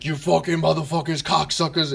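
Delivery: put-on heavy Jersey accent. Imitating a comic from Jersey: Joey Diaz impression, heavy Jersey accent. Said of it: "heavy Jersey accent".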